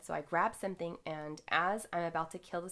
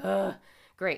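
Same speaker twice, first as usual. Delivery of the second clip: loud put-on groan full of anxiety; 8 dB louder than usual. Retelling walking down a hallway of spiders: imitating own anxious groan. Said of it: "Full of anxiety".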